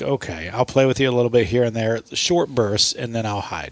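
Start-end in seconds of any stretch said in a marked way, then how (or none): none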